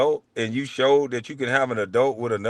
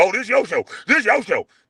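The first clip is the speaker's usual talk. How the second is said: acted-out yelling in a higher pitch; 8 semitones higher than usual. Retell the argument with Gil over whose show it is, imitating someone yelling.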